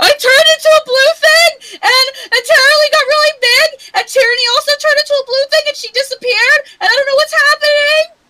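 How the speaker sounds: put-on sobbing. Playing a character bursting in on the headmaster: acted crying. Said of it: "I burst in, actively crying".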